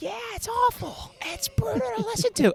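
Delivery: whining, mocking tone.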